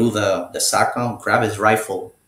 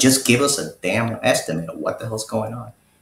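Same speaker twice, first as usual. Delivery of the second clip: ordinary talk, nothing marked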